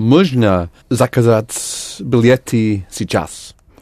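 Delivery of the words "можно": rising stress on можно. Showing how to turn the phrase into a question, stress on можно. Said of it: "raise your voice on можно".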